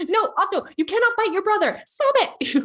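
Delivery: fed-up, frustrated shout, very high, very loud. A parent retells shouting at their three-year-old son, reenacting frustrated shouting. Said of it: "frustrated, shouting at them".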